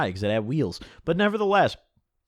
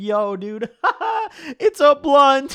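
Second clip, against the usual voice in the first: high, loud, laughing through the words; 13 semitones higher, 5 dB louder than usual. Imitating a stoned friend laughing when handed the blunt: imitating someone laughing while talking. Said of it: "he'd crack out laughing".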